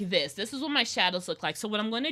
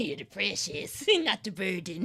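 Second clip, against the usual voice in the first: put-on goblin creature voice; 3 semitones lower than usual. Speaking to the audience and switching into a goblin voice. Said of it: "In goblin voice".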